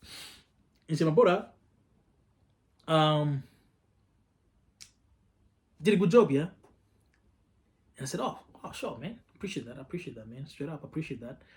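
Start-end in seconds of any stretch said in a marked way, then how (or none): 1.1-6.5 put-on British accent with Nigerian sound. Retelling a man praising his work, in a Nigerian-British accent. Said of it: "he had a Nigerian and British and British accent".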